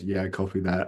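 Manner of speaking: really sad, deflated, low-pitched voice. Retelling how he answered when told something this weekend, imitating a really sad reply. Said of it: "Like really sadly".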